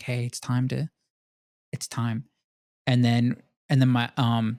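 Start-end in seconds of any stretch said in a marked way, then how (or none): 0.0-2.2 hushed, soft half-whisper. Retelling waking the youngest sister with the news: retelling a half-whisper. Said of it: "I sorta whisper to her".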